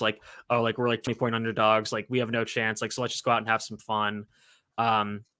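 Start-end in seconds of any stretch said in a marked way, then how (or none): none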